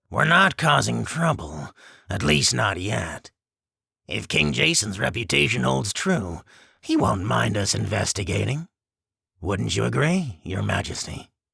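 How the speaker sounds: rough, harsh, rasping, raspy creature beast voice. A narrator reads the spear-holder beast questioning the human; harsh raspy beast voice. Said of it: "The spear-holder beast's voice is a harsh rasp".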